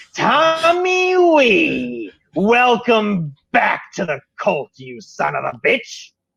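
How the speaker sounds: high, swooping cackling skeleton voice, wee drawn out. A skeletal figure calls out to a returning cult member, cackling voice. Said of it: "you hear a voice uh, uh, cackle out to you".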